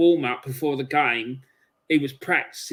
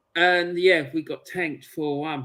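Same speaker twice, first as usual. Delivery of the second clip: ordinary talk, nothing marked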